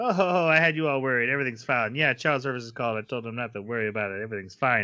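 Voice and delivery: plain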